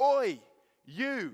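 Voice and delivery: very loud, high-pitched yell. Retelling a stranger calling out across a campus: imitating someone shouting. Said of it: "one of them shouted out after me".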